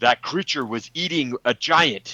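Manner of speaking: put-on yell. A game player's character calls out during a fight with a creature, yelling.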